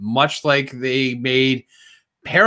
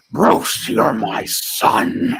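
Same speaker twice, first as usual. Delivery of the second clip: put-on very slow, rough, dragged-out drunken drawl; 9 semitones higher than usual. Imitating an actor playing a father: Nick Nolte impression. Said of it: "A drunken old hobo who talk like this".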